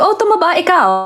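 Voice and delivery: high, wide-ranging Filipino accent.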